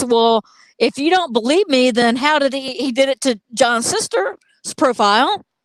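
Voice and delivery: ordinary delivery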